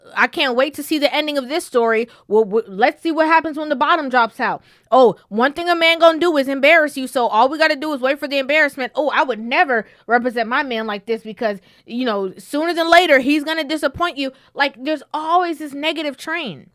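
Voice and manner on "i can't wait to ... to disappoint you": plain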